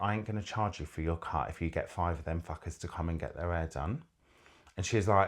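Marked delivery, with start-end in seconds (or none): 0.0-4.0 soft, hushed, confidential half-whisper. Retelling an offer made to a friend in a full house: retelling a half-whisper. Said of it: "I just whispered to her".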